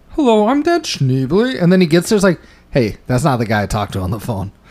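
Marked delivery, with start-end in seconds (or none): 0.2-1.6 high-pitched, slow, dopey voice. Act out a man introducing himself with a false-sounding voice, in a dumb Kermit the Frog voice. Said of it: "He fucking used that dumb voice".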